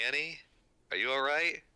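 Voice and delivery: loud shouting, pitched high. Calling down to a fallen companion from above: shouting down. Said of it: "I guess I'll shout down".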